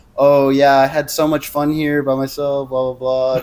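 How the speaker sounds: mock angry sarcasm. Retelling what an upset girlfriend said at the door: imitating someone being sarcastic. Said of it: "so sarcastic".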